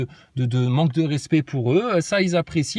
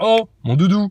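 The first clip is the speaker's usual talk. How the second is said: put-on big booming voice, higher and louder; 4 semitones higher, 5 dB louder than usual. Imitating Brigitte scolding Macron for hands in pockets: imitating Brigitte Macron, big voice. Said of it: "avec sa grosse voix".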